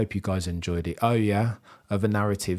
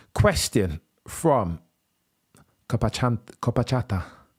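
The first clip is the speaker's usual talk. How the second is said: very poor, put-on Spanish accent; 2 semitones higher than usual. Reading out a viewer's question and name, in a very poor Spanish accent. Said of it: "my very poor Spanish accent".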